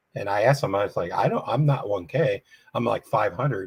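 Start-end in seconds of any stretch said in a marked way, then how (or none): none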